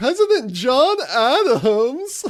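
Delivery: high, slow, loud, maniacal condescending cackle.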